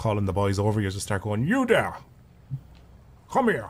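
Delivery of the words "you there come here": put-on posh accent, high and swooping. Speaker shows calling the boys over like a landowner, posher accent. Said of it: "Start talking in a kind of posher accent".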